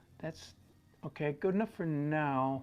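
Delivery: unsure, hesitating delivery, drawn out. Painting while teaching viewers, judging the work so far: hesitant. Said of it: "Do you hear the hesitation in my voice?".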